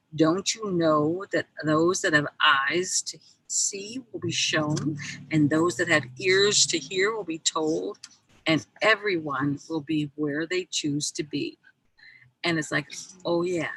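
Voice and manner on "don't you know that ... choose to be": plain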